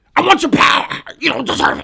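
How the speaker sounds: rough, raspy, very high, loud voice. Showing listeners how the actor talks as Bruce Banner's father in Hulk, do a Nick Nolte impression. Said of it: "you guys know how Nick Nolte talks".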